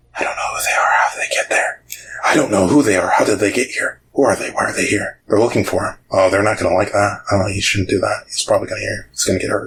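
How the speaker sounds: whispering voices. Voicing what the players hear in the dark: whispering voices. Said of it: "not just any whispers, but whispers of".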